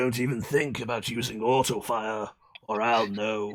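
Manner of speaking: put-on deep, low delivery with slight English accent slipping in. Doing a spoken line in character: Ocelot voice. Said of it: "a little too much of an English accent slipped out".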